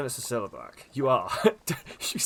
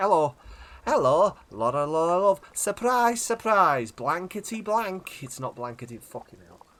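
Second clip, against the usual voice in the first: put-on, higher, Lancashire-tinged Scouse accent; 4 semitones higher than usual. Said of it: "going very Lancashire here".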